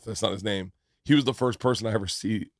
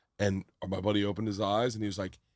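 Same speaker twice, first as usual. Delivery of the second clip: ordinary delivery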